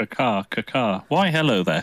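odd, squawking seagull voice with caws. Greeting the others after being introduced: weird seagull accent. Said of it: "that's a weird seagull accent".

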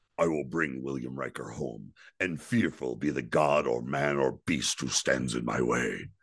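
very low, deep, declaiming voice. Performing a speech for a listener who then rates it: Worf impression. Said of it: "that was a good Worf".

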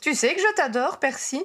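eager, gushing enthusiasm. Ginny speaks to her brother Percy in an enthusiastic voice. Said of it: "d'une voix enthousiaste".

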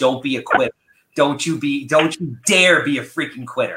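plain

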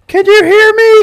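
very high, very loud, drawn-out yell. Retelling yelling across the house on broken walkie-talkies: imitating yelling across a house. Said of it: "just yelling at each other across the house".

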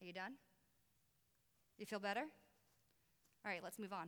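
very hushed, low, soft, gently stern voice. After freaking out at God, the speaker gives God's reply: imitating God, soft yet stern. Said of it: "in a very soft yet stern voice".

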